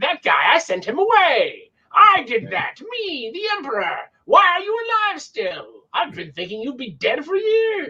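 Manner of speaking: high, swooping cartoon villain voice. Speaker voicing the Emperor while discussing what they read; Skeletor voice.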